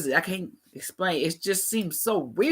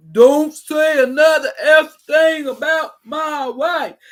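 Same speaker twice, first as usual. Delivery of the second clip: put-on loud, high, slow, drawn-out child voice near tears; 9 semitones higher, 10 dB louder than usual. Imitating how he talked afterwards: Will Smith about to cry. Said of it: "that's what he sound like".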